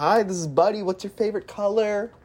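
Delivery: very high-pitched voice. Showing how the phone gets answered now: Buddy from Elf voice. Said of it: "so now I'm answering the phone".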